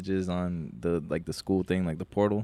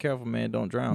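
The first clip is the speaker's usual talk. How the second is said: ordinary talk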